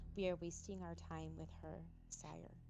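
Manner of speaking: hushed, muttered under-the-breath aside. Tabletop player, in character, speaks to a companion in Undercommon, under the breath. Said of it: "I'm gonna say to Alora under my breath".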